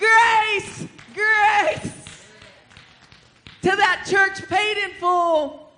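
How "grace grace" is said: loud ringing shouting. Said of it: "And I said".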